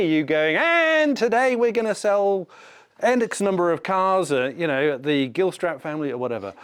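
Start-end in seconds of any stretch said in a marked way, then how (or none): 0.5-4.3 high, drawn-out, hard-sell car-dealership radio announcer. Giving job-application advice, mimicking what an HR person doesn't want: hard-sell commercial voice. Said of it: "doesn't want to hear your commercial voice".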